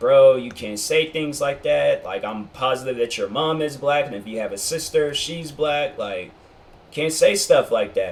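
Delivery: plain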